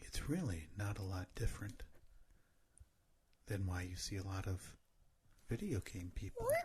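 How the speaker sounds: deep, hushed, barely audible ASMR murmur. Asked to respond in an ASMR voice, the speaker continues the point in ASMR voice. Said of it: "can you respond in your A S M R voice?".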